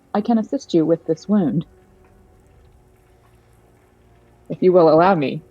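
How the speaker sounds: odd, unconvincing, ineffective attempt at speaking quietly. Voicing an automaton offering to treat a wound: trying to speak quieter. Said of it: "speak in a voice where he's clearly trying to be quieter".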